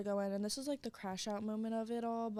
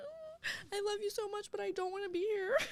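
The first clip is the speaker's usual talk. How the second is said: play-acted sobbing, crying, pitched way up; 11 semitones higher than usual. Retelling walking in to an aunt: retelling own crying plea. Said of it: "I'm crying".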